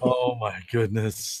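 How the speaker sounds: talking through laughter. Reacting to the other speaker's joke, laughing while talking. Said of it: "Sorry, I'm laughing".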